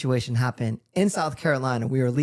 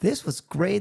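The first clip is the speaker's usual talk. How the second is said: showy, pointed delivery, meant to be overheard; 4 semitones higher than usual. Speaker retells talking to his wife as the plane landed, retelling a loud remark. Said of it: "really loudly to my wife".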